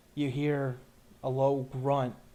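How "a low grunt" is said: plain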